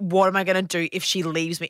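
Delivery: ordinary delivery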